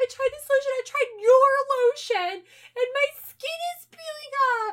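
very high, loud fake crying meltdown. Retelling how a girlfriend answers her boyfriend's question: imitating fake crying. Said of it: "fake crying and freaking out".

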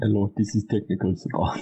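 mimicked Indian accent. Asked to mimic an accent, the speaker tries an indian accent. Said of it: "Do an Indian accent and I'll mimic it".

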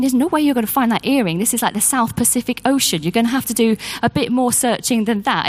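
plain

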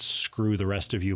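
plain

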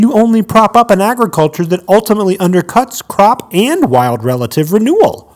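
put-on passionate reading-aloud. Reading a quote from an article aloud: reading with passion. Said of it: "You just read it with passion".

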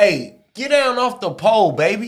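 high, slow drawl. Doing an impression of a friend on the phone after being asked: imitating a friend on the phone. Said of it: "Do the impression".

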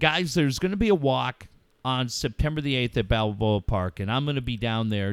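plain

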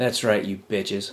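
muttering under breath. Showing the words said after hearing one's name: muttering under breath. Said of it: "but it's under my breath".

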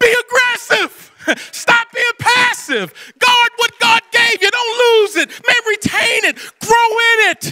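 fervent, shouted, pitched high.

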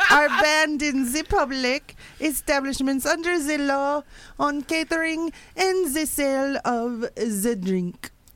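put-on Swiss accent. Voicing an officer of the law, in a Swiss accent. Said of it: "Best Swiss accent".

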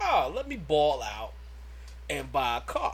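ordinary delivery

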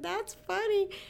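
very high, sheepish, doubtful tone. Speaker retells her reply to a woman praising her hair, retelling a sheepish reply. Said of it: "just kind of this sheepish".

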